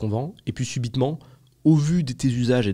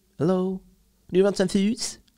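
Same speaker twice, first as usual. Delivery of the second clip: put-on pitched-up voice with a London accent; 8 semitones higher than usual. Acting out a waitress arriving at a London restaurant: imitating a London waitress. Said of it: "la meuf arrive".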